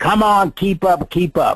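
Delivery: put-on low-key, mild yell. Retelling how he screamed at the speaker walking behind, retelling someone screaming. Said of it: "he's screaming at me".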